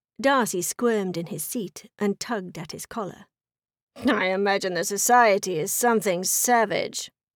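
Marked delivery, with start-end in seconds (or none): 4.0-7.1 scoffing, with a snort. Darcy answers a remark about Bingley's new home, snorting. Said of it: "he snorted".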